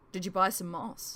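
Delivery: ordinary delivery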